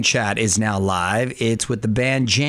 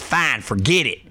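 put-on cowboy voice, much slower. Speaker describing a favorite movie's cowboy hero, doing a Bud impression. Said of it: "he talked like this".

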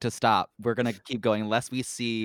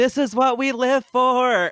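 long, very high, drawn-out yell, acted out; 13 semitones higher, 5 dB louder than usual. Retelling entering a number in the rain: imitating own yell. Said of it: "and I just yelled".

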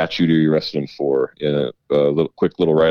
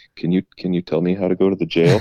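put-on meek little mouse voice; 3 semitones higher than usual. Retelling asking a frustrated man the way to the jail, in a tiny mouse voice. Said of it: "mouse voice".

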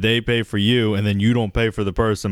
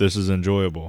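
put-on deadpan monotone, much lower; 2 semitones lower than usual. Imitating a straight-faced guy reading Cards Against Humanity, in a deadpan monotone. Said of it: "just a straight face person".

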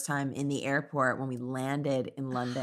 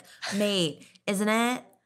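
American voice with pitched-up fake British accent; 7 semitones higher than usual. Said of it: "one of those Americans who visits London".

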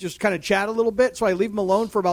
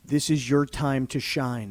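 very low, slow, grave and deliberate coach voice; 7 semitones lower, 5 dB quieter than usual. Retelling the swing coach's words to the golfer: imitating the swing coach, serious. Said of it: "The swing coach goes just like this".

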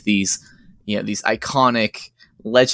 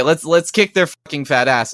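mock, mild, half-yelled cry; 5 semitones higher than usual. Retelling what Ichiro said to the group, retelling Ichiro's yell. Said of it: "And he's just yelling it".

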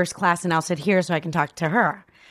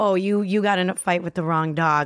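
put-on feisty, spirited tone. Retelling a fight with flight attendants on a plane: retelling a feisty comeback. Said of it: "that's where I get feisty".

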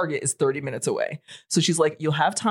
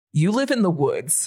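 put-on deadpan, dead straight delivery. Retelling what she said after the speaker complained about bugs, imitating a deadpan delivery. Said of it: "she looked at me deadpan".

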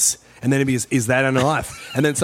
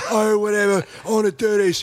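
mild, offhand, easygoing, unbothered tone; 8 semitones higher than usual. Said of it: "a very soft kind of guy who's just like".

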